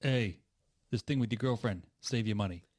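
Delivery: put-on loud upstate New York accent. Retelling what dad said in the garage: imitating dad's upstate New York accent. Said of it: "Was that the voice?".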